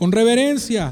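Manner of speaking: ordinary talk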